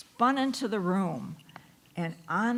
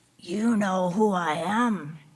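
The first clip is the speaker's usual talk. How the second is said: little, gravelly, raised voice; 2 semitones lower, 5 dB louder than usual. The tiny man under Katie's bed speaks to her, in the Sandman's small, gravelly voice. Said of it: "he said in a small, gravelly voice".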